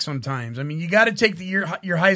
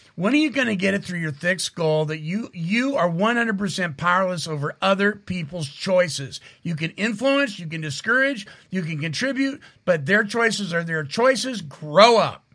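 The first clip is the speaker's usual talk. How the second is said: ordinary delivery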